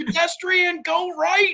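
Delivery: put-on, very high, urgent shouted yell. Retelling a car ride, yelling to the driver about a pedestrian: retelling own yell. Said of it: "I'm yelling about the pedestrian".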